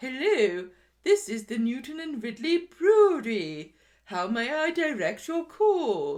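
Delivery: put-on, high, loud telephone receptionist voice. Speaker imitates a woman answering a brewery phone; fake phone voice. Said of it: "without putting on a fake voice".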